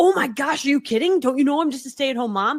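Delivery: giddy, starstruck, overexcited gushing with disbelief. Contrasting with the professional reply, imitating own overexcited reaction. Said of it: "versus like".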